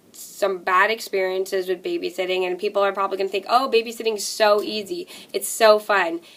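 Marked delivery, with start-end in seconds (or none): none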